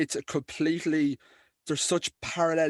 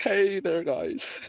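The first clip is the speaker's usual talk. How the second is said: small, timid, tiny, high voice; 5 semitones higher than usual. Imitating a man who greets people in a surprisingly small voice: mock tiny shy voice. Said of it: "really tiny, shy voice".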